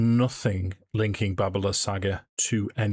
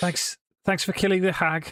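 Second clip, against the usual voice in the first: light Liverpool lilt, very high pitched; 11 semitones higher than usual. Voicing a raven spokesperson, the speaker talks in a mild scouse accent. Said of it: "he will have a mildly Scouse accent".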